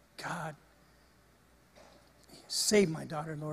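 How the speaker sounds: put-on pleading tone. Retelling begging God in the emergency room: retelling own begging. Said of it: "I'm just begging God".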